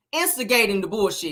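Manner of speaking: plain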